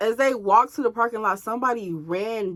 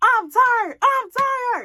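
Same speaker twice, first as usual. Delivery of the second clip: mock fed-up yelling, very high and drawn out; 13 semitones higher than usual. Telling listeners how she kept yelling the same thing at him: retelling own angry yelling. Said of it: "I just kept yelling at him".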